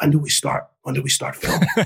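whispered voice. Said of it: "he whispers".

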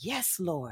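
acted whispering. Retelling an answer to god while standing in line: retelling a whisper. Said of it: "And I whispered".

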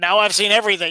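normal talking voice

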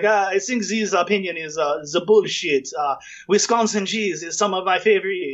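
put-on heavy French accent. Retelling what a French chef said on the radio, in a heavy French accent. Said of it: "this French guy in this heavy accent is like".

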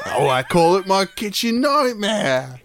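put-on Cockney accent, pitched very high. Acting out a man naming his kitchen nightmare: Cockney accent. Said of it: "we've made him so cockney".

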